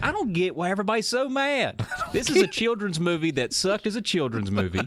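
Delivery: relaxed put-on country accent, high and swooping. Reading out a listener's movie review in a put-on voice: Patrick voice in country accent. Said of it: "That accent".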